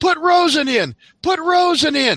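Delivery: very high, loud hollering. Retelling a game on the sidelines, the speaker imitates Mom hollering from behind. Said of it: "this familiar voice hollering behind".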